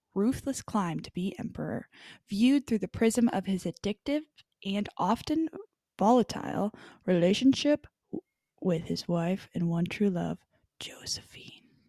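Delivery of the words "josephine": very quiet whisper for dramatic effect. Reading a movie plot description aloud, whispered. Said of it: "I whispered that like that".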